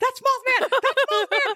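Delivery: high, panicked screaming. Retelling a night drive when a winged thing flew past: imitating Ian screaming. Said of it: "Ian screaming in the backseat".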